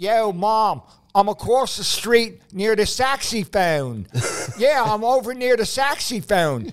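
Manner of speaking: put-on prominent Philadelphia accent, laid on thick. Retelling a woman on the phone to her mother near a saxophone player: prominent philadelphia accent. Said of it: "her Philadelphia accent was so prominent".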